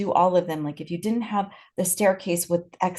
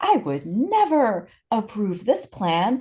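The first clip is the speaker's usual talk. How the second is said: put-on angry scream, higher; 3 semitones higher than usual. Retelling a program officer's letter rejecting a library plan: imitating Bertram screaming. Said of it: "screaming at them and saying".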